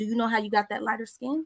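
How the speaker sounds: usual speaking voice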